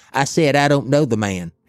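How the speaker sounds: put-on slurred-together, mush-mouth South Alabama accent. Recalling a church Passion play, the speaker quotes a fellow performer's line: Jim Cracker's mush-mouth South Alabama accent. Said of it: "that old mush mouth, South Alabama accent".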